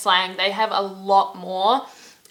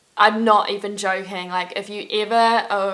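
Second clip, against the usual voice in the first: plain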